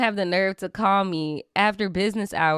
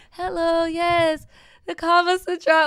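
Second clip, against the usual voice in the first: put-on Haitian-accented voice; 8 semitones higher than usual. Retelling how mom covers for a dropped call: sweet Haitian mom voice. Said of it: "you do the the sweet Haitian mom voice".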